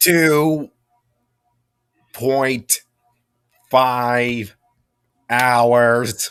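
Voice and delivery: very slow, lagging, drawn-out machine voice. Answering how long it is until Mustafar, very slow. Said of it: "You said that really slow".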